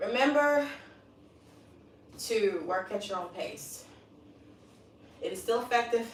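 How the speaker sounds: winded, out of breath, catching breath. Right after finishing the daily workout, the speaker addresses the viewers, out of breath. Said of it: "Let me catch my breath here".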